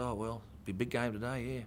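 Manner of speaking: plain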